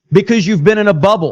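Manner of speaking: usual speaking voice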